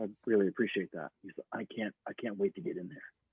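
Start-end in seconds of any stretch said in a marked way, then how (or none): 1.5-3.0 hushed, breathy big bad villain voice. Retelling what John said, the speaker imitates John's big-bad-guy voice. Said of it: "that's how John talks. He's like a big bad guy".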